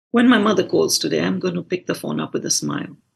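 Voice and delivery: ordinary talk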